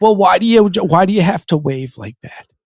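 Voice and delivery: put-on Bronx woman voice. Retelling what a woman asked her, the speaker uses a bronx lady accent. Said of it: "I'm going to do her voice as an, a lady from the Bronx".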